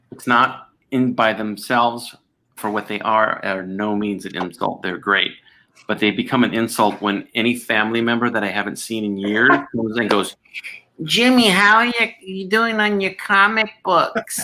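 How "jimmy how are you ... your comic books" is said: put-on very high-pitched East Coast accent. Imitating a relative he hasn't seen in years: East Coast accent. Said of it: "relatives sound like they're from the East Coast".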